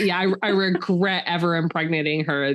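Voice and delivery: ordinary talk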